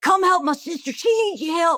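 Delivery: put-on high hollering call. Speaker recalls her brother calling people over, imitating someone hollering. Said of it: "holler at people to come over".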